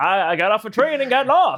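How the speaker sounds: put-on vaudevillian Maine farmer accent, loud and high. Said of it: "I sound like a Maine farmer".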